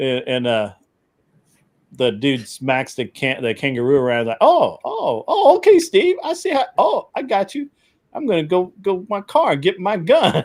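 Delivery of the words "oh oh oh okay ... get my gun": very high, silly dubbed-video voice. Retelling a dubbed video of a kangaroo meeting a man: imitating dubbed kangaroo voice. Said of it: "where it's dubbed is perfect, it's like".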